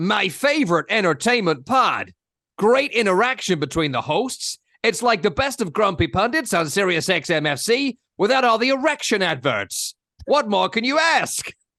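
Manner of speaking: put-on American accent throughout. Host reads a listener's review aloud, doing an American accent as Kurt. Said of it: "I'll do the accent".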